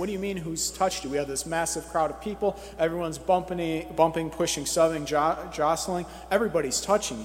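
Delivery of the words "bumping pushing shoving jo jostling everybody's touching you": ordinary talk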